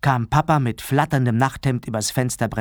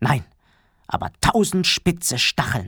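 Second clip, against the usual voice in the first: ordinary delivery, nothing marked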